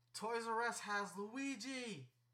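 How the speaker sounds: acted-out, very slow, drawn-out, top-of-the-lungs yell. Retelling what they yelled inside a Best Buy: retelling a shout. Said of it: "at the top of my lungs".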